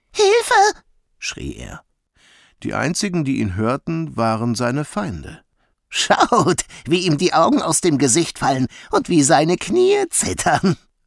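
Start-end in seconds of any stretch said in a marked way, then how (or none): 5.9-10.8 high, swooping, jeering words through mocking laughter. Narrator reading a jackal's line in a jungle story, laughing. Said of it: "lachte Slinky".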